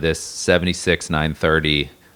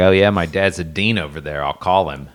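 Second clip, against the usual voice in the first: heavy, thick put-on Pittsburgh accent. Retelling what a coworker at the next lift said: imitating a thick Pittsburgh accent. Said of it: "in his disgusting Pittsburgh accent was like".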